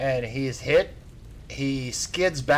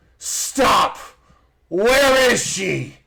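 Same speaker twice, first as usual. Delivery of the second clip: very slow, loud, high, drawn-out scream; 8 semitones higher, 8 dB louder than usual. Voicing a character who stops the group on the road: screaming in character. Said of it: "He screams at you and says".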